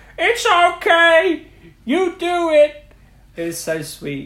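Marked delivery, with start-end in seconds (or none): 0.2-2.8 loud, very high, very slow, drawn-out character voice. Discussing a sad scene with friends, doing a Bing Bong impression. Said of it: "That was a good Bing Bong impression".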